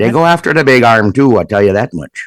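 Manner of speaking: put-on Minnesota accent. Talking about catching muskies, joking in a put-on Minnesota accent. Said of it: "why are you speaking in this accent?".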